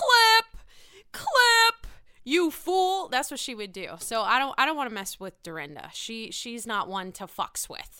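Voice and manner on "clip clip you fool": shrill, very slow, very high, drawn-out yell. Imagining how Dorinda would react to the speaker: imitating Dorinda yelling. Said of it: "She would look at me and she would go".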